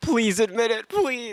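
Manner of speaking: crying, pleading through tears. Telling about a man who watched Zootopia alone, imitating him: imitating someone crying, pleading. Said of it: "crying, like tears in his eyes".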